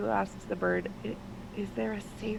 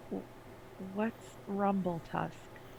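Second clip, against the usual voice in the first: hushed half-whisper, stammering and stumbling; 4 dB quieter than usual. Speaking as her character in the story, half-whispering a question. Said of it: "she kind of whispers".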